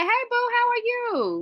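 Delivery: high, bubbly, warm friendly voice. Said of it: "she responded back like".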